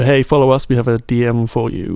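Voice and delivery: ordinary talk, nothing marked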